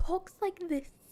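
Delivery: British mother's accent. Explaining the character's mom was made British too, in a British accent. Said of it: "I made her mom British too. Her mom talks like this".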